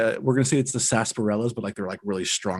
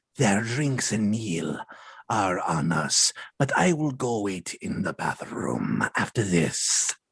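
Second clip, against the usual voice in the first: voice of a reptilian, lizard-like creature. Disguised to look like the lizard, speaking in lizard character voice. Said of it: "His voice sounds like this".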